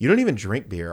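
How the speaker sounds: mock attitude-filled tone. Recounting talking back to him over the poured-out beer, retelling with attitude. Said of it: "all attitude-y".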